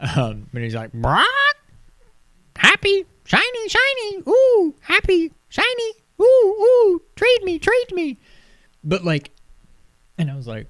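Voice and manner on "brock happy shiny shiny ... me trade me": very high, loud, squawky parrot voice. Describing a bird character in a VR game, imitating a talking parrot. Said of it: "he talks like a parrot".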